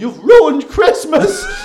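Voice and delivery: crying woman's high, loud, slow, wailing outburst.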